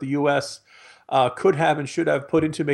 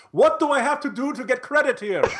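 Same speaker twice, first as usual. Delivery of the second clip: very high shouting and yelling; 9 semitones higher than usual. Speaker imagines the ISIS founder yelling at MSNBC, mock-yelling Abu Bakr al-Baghdadi impression. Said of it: "he's just yelling at the screen".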